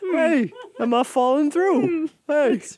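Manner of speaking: puppet-like character voice. Speaker voicing a dog's thoughts as it walks on ice: Muppet-esque voice. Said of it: "it's Muppet-esque".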